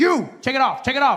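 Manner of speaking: put-on rough, mean, barked security-guard shout. Speaker retells metal detector staff ordering travelers, imitating a guard shouting. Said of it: "They will shout to you".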